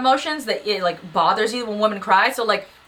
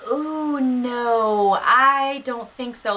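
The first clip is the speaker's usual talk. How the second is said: very slow, lingering drawl with "no" stretched; 4 semitones higher than usual. Describing an actress from a Cinderella movie, showing how she talks in a slow Coolidge impression. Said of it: "she talks very slow".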